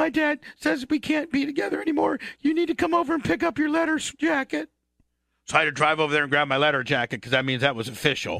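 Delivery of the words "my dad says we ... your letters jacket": put-on sobbing, very high and tearful. Retelling being told on the phone they must break up: imitating someone crying. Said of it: "Nikki's crying".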